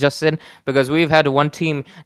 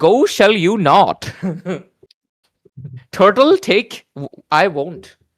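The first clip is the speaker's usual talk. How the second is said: slow, drawn-out character voice with words in reversed order; 4 semitones higher than usual. Explaining how a character talks, then imitating it: Yoda voice. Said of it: "you speak in kind of a reverse way".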